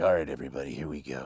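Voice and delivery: very low, hushed, intense bad-guy voice. Demonstrating the voice people compliment, turning it on in an intense put-on voice. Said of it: "I can just turn it on like".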